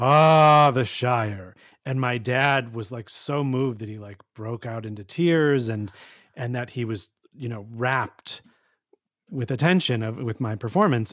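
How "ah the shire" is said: grand, theatrical booming stage voice with drawn-out ah. Recalling their stage entrance that moved their dad to tears, retelling a booming stage voice. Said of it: "I had this booming voice and I said".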